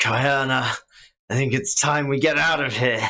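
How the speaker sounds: snarling villain voice. Voicing a wounded foe who snarls and looks around: snarling villain line. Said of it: "He kind of snarls".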